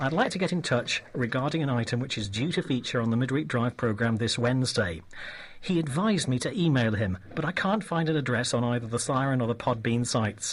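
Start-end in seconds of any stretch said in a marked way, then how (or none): none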